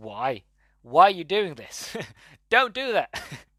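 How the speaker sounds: shouted, rising, screamed voice. Retelling watching a movie character do something foolish: retelling screaming at the TV. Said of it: "I'm just screaming at the T V".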